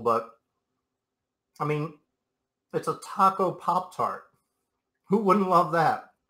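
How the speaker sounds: speaking with mouth full. Host eating a taco pop-tart on camera, talking with mouth full. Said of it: "I don't mean to talk my mouth full".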